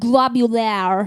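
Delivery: French-accented pronunciation. Saying a single word, in a French accent. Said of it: "I said that that way because I'm French".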